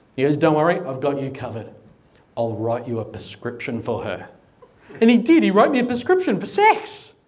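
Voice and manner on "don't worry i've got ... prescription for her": ordinary talk, nothing marked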